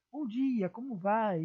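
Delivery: slow, friendly, smiling tone. Tips for speaking naturally, a greeting said with a smiling voice. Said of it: "Como se você estivesse sorrindo".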